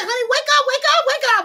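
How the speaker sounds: acted-out screaming, shrill and pitched very high. Retelling trying to wake a husband who stopped breathing: retelling own scream. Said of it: "I was screaming".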